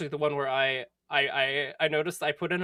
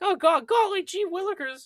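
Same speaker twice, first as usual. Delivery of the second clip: eager sidekick voice, pitched very high; 4 dB louder than usual. Describing finding a voice for an audition as a sidekick: Morty-like sidekick voice. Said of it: "it's sidekick".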